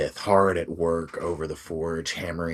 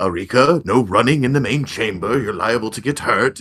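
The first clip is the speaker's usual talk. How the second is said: put-on very loud, booming, pitched-up aged wizard voice; 6 semitones higher, 9 dB louder than usual. Voicing an old wizard telling Arika not to run: old wizard voice. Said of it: "you hear an old wizard say".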